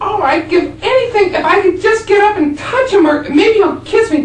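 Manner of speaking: very high, loud woman's voice with Buffalo, New York accent.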